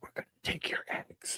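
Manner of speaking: soft, breathy, barely voiced whisper. Recapping a scene's ending, the speaker acts out a character's line, retelling a whisper. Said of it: "he he just whispers".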